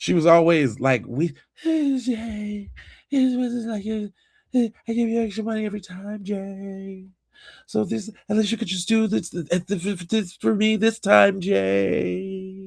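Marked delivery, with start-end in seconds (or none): 1.1-12.7 mock sleepy, tired, stretched-out pleading drawl, pitched up. Retelling what a customer used to say: imitating a tired, drawn-out voice. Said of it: "she always used to talk like she was super tired".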